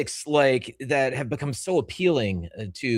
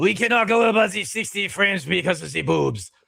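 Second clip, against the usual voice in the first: fake, put-on French accent, pitched up; 6 semitones higher, 3 dB louder than usual. Imagining what a man should have said to gamers: put-on french accent. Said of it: "my French accent".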